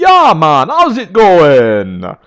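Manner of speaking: put-on booming, drawn-out, sing-song Jamaican accent. Reviewing a game's characters, demonstrating Waka's Jamaican accent. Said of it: "sort of the Jamaican accent and goes with a like".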